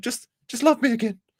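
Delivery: very high-pitched, begging, pleading voice. Impersonating someone as a jilted ex, mock-pleading. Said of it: "he's the jilted ex".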